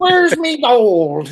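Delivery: poor, high-pitched Irish accent, "gold" drawn out. Mocking an actor's horrible accent in a movie: bad Lucky Charms Irish accent. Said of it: "Lucky Charms ass accent".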